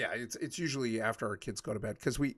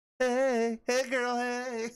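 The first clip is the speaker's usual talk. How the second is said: put-on high-pitched girlish voice; 12 semitones higher, 4 dB louder than usual. Passing along a greeting from Eris, say it like Eris in a really girly voice. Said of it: "in a really girly voice".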